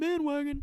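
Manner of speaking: voice breaks very high on "bandwagon". Speaker explaining which team to pick as a fan, voice cracks on 'bandwagon'. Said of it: "voice crack".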